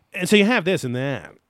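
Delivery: very loud, stop-start delivery in bursts. Imitating a podcast guest's speech cadence: Greg Newkirk impression. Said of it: "my Greg Newkirk impression".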